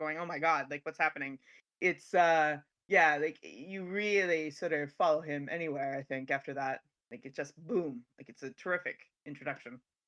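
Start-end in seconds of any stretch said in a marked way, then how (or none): 0.2-1.4 put-on shocked voice. Describing a film's intro scene, imitating David in shock. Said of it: "picking his nose in shock".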